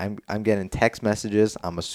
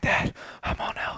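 put-on heavy breathing, out of breath, quieter. Retelling calling his dad after running over a hill, acting out heavy breathing. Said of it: "I'm like heavy breathing".

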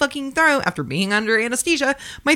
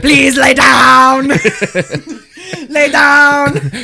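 put-on Austrian-accented voice, louder; 2 semitones higher, 9 dB louder than usual. Joking about hypnosis, trying an Arnold Schwarzenegger voice. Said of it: "I cannot talk like Arnold Schwarzenegger".

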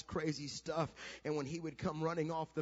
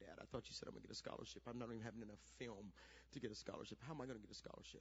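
mock, very quiet, hushed words through tears; 7 semitones lower, 16 dB quieter than usual. Retelling a son coming home after a game: imitating son crying. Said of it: "just start crying, going".

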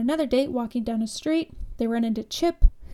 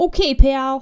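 put-on loud, very menacing police officer voice; 7 dB louder than usual. Recapping a movie, the speaker quotes a police officer pulling up: mock-menacing cop voice. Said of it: "in his very menacing voice".

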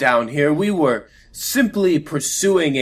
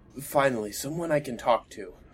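very soft, quiet mumble under the breath; 9 dB quieter than usual. Narrating as Lou stands and brushes off his clothes, muttered under his breath. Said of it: "kind of under his breath".

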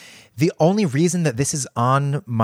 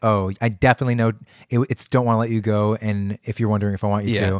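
ordinary delivery

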